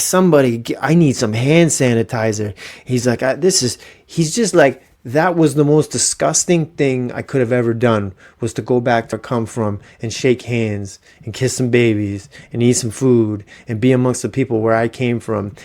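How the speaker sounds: ordinary talk, nothing marked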